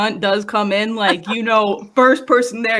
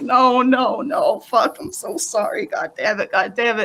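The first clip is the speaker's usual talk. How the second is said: slow, tearful mock sobbing through every word. Retelling the moment the news turned bad: retelling own crying.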